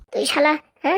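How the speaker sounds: ordinary delivery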